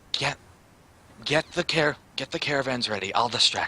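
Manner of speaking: hushed, low half-whisper. Half-whispering to the others in character while planning a distraction: half-whispering. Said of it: "so I whisper to everyone else".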